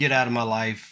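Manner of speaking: ordinary delivery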